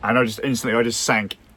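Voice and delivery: ordinary talk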